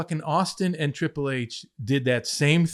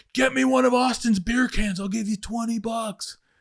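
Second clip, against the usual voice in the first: hollering, raised, pitched-up yell; 8 semitones higher than usual. Retelling fans in the upper seats yelling down: imitating fans yelling. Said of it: "who couldn't get down on the main floor yelling at me".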